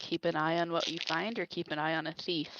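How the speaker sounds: affronted grumble, muttered quietly under the breath. Voicing a character reacting to thief comments: muttering under her breath. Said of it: "Zira just kinda mutters under her breath".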